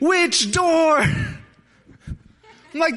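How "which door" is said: shrill, very high, loud yelling. Retelling a brother's panicked reply: imitating a brother screaming back. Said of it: "he's screaming back at me".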